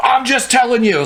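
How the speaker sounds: high, drawn-out yell. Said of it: "So he's, like, yelling".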